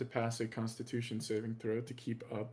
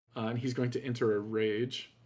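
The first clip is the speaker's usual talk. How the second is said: usual speaking voice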